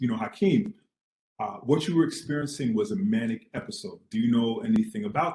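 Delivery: normal talking voice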